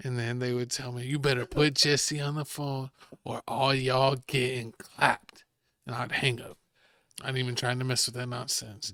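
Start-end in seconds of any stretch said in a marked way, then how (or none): 1.1-5.4 threatening, menacing demon-like voice. Retelling an anonymous phone caller's threat: imitating a demon-like voice. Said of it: "It sounds like a demon".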